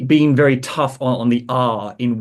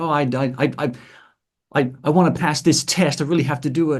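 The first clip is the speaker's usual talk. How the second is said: put-on enthusiastic, eager teenage schoolboy voice; 3 semitones higher than usual. Speaker demonstrates a sequence of character voices, starting with enthusiastic schoolboy voice. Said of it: "like enthusiastic schoolboy".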